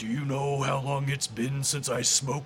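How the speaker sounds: very deep voice, dropped way down low. Retelling what she heard in the middle of the night, very deep voice. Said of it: "deep, deep voice going like".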